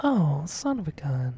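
sweet, very slow, drawn-out, polite mild exclamation. Imitating the film's soft-spoken character cursing after she falls: imitating a sweet soft-spoken woman. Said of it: "she's so sweet and soft-spoken".

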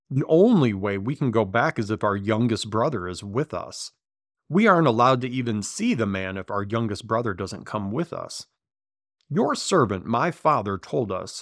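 plain

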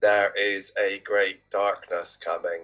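low, flat, toneless robotic monotone. Mocking how actors in a trailer deliver lines, imitating trailer's flat monotone. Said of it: "delivering their lines like they're talking like this".

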